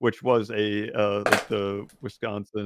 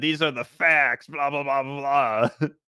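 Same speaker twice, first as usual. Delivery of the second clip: yelling, higher; 4 semitones higher than usual. Retelling an argument about political parties: imitating a man screaming. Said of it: "screaming at us about our".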